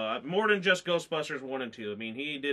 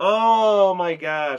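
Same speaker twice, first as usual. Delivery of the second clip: put-on loud, slow bawling like a baby. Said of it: "I was bawling like a baby".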